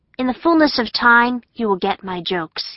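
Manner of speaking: ordinary delivery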